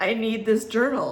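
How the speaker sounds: ordinary talk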